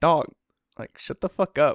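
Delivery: ordinary talk, nothing marked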